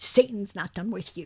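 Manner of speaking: acted very serious manner. Retelling what a bishop said, imitating a very serious warning. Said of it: "very seriously".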